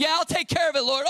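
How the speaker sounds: eager excited gushing.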